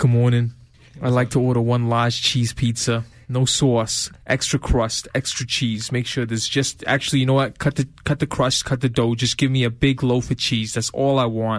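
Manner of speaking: performed New York accent. Put on the spot and asked for a new york accent, ordering pizza in a new york accent. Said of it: "Give me a New York accent real quick".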